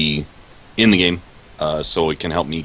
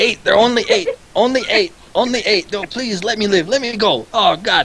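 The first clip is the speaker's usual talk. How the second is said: terrified goblin creature voice, very high cries. A captured hobgoblin dragged back for questioning begs its captors: terrified hobgoblin pleading. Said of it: "So you drag the hobgoblin back. / and he slowly comes to through a litany of green-skin curses. / "Me no know. Me hear lots of screams and cries, but no, me no see nothing." / he's shitting his pants".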